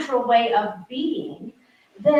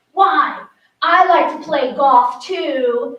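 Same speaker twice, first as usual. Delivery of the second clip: mock brave, stern, courageous voice, very slow; 6 dB louder than usual. Retelling a four-year-old answering her grandmother, imitating a stern, courageous girl. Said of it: "in her most, you know, stern, courageous voice says".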